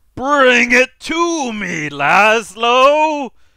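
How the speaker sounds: very loud, high, slow, drawn-out booming voice. Narrating a scene to listeners in a room; a booming voice from overhead. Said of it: "there is a voice that booms from overhead".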